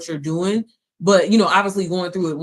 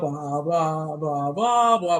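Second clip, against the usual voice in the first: very slow, boring, droning lecturer voice; 2 semitones lower, 4 dB quieter than usual. Mocking how a certain school teacher sounds: imitating a droning teacher voice. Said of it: "that type of voice".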